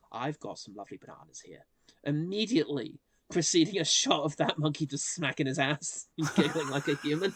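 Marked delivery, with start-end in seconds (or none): 0.2-1.7 play-acted mournful, doleful coaxing in low, soft voice. Quoting a film character tempting Dunstan back into the hotel room, imitating his sad voice. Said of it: "says in his sad voice".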